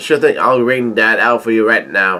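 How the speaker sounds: ordinary delivery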